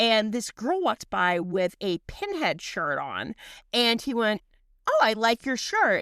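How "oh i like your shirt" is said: put-on proper British accent. Retelling what a British man said to a girl: proper British voice imitating Julian. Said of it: "he's British, so very, like, proper".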